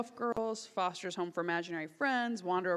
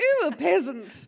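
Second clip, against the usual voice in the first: high, raised, haughty queen voice; 9 semitones higher, 11 dB louder than usual. Showing the queen personality voice of [name]: [name]'s queen voice. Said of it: "the queen was really fun, 'cause I feel like I use that voice".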